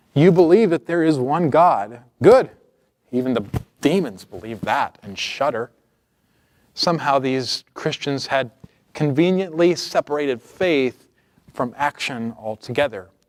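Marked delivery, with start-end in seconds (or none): 0.1-5.7 louder, sneering sarcastic delivery. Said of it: "You can hear the sarcasm in James's words".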